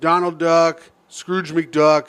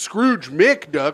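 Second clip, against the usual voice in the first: ordinary talk, nothing marked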